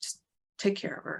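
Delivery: hushed, very quiet whisper. Game narrator voices a character's parting words before she leaves the room: speaking very quietly. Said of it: "just very quietly says".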